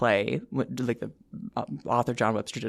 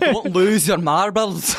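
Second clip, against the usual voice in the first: fake Scottish accent, loud, slow, drawn out; 7 semitones higher, 5 dB louder than usual. Answering a request for a Scottish accent: put-on Scottish accent. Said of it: "your best, like, Scottish accent".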